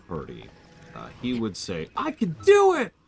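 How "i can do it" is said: put-on shocked voice, much higher, louder, slower. A player retells what party member Yunobo would say, in Yunobo's put-on shocked tone. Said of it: "in like this really unique tone... he sounds like he's just been cut straight to his core, like he's completely shocked".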